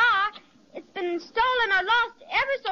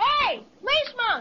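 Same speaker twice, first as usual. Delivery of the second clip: yelling, calling out loudly; 3 semitones higher than usual. In an acted boat scene, a character hails a policeman who cannot hear, yelling to a policeman. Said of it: "Yell at him".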